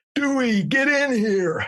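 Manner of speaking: very high-pitched, put-on bellowing shout. Recalling him shouting from his office to the speaker at the lab bench, retelling a bellowing shout. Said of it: "his bellowing voice shout out".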